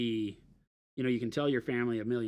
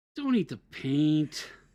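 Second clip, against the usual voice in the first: disappointed, let-down tone, high and raised; 6 semitones higher, 7 dB louder than usual. Playing a game of saying one line four different ways, disappointed. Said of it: "say it disappointed".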